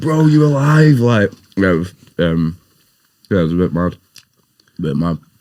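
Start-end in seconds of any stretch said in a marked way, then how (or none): 0.0-1.0 scream, higher and louder. Retelling waking in an ambulance after a car crash: imitating Boo screaming. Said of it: "It does actually sound like him".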